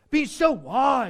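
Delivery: slow, loud sarcastic drawl. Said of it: "and here's the sarcasm".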